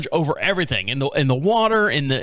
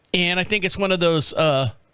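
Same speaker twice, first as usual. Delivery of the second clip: plain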